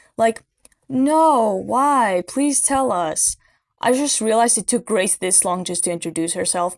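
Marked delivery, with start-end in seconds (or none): 0.9-3.4 put-on, high, very slow, sarcastic child voice. Speaker mocking how a child character is voiced, imitating Emily sounding sarcastic. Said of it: "Emily sounds sarcastic".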